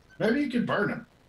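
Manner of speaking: put-on friendly troll voice. A voice chimes in with a suggestion to the group, in a troll voice. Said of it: "thanks, troll, wherever that voice came from".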